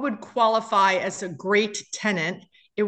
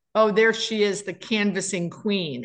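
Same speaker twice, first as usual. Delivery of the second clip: normal talking voice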